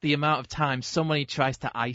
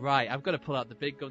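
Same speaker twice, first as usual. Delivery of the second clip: ordinary delivery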